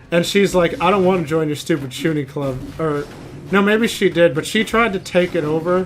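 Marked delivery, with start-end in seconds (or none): none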